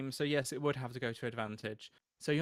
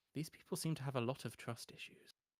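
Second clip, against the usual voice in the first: low-volume, quiet mutter under the breath; 7 dB quieter than usual. Narrator voices an old man remarking while walking along, very quietly to himself. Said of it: "just says like very quietly, like to himself".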